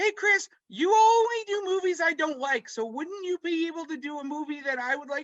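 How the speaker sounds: put-on very high-pitched old lady voice. Quoting his sister's request, he makes her sound like a grandma. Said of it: "I don't know why I made my sister sound like a grandma".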